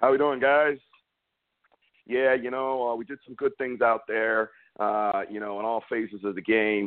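robotic, monotone, by-the-numbers press-conference drone. Mocking a coach whose news conferences are all the same: Jason Garrett impression. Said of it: "I can do a Jason Garrett news conference".

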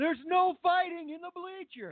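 put-on very high, sloshed, drunk old man voice. Retelling a video clip's line: imitating a drunk old man. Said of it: "old man who was just drunk".

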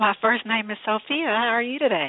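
bright, cheery, chipper voice. A caller greets the host and gives her first name, chipper. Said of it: "You sound awfully chipper".

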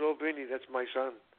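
put-on low, sorrowful, mournful voice. Retelling how the owner said who his son was, imitating someone sad. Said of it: "And he said it so sad".

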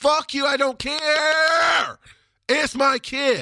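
forceful, very loud, very slow, drawn-out, aggressive defiance. Parent pushing back against societal niceness about their daughter; aggressive and loud. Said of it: "very aggressive and very loud about this".

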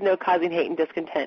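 ordinary talk, nothing marked

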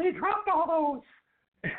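very high, squeaky cartoon mouse voice. Retelling what Arthur said after someone read off the file, imitating Arthur's Mickey Mouse voice. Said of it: "that Mickey Mouse voice of his".

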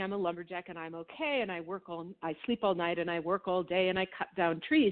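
plain

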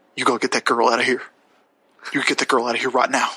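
deep video-game character voice. Speaker shares an impression of everyone in a game they're playing: impression of The Last of Us characters. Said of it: "Here is my impression of literally everyone in the game".

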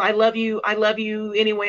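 ordinary talk

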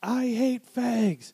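put-on very high, all-out shrieking scream. Retelling a comedian's joke where God at a party ends up screaming. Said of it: "he would end up screaming like".

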